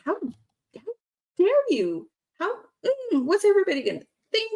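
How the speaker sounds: put-on very high, swooping, angry, indignant emotional outburst. Parent recounting what she said to her son: retelling an angry outburst. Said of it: "got like angry and emotional".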